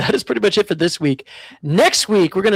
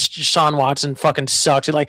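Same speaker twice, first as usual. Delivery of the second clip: plain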